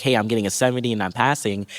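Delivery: ordinary delivery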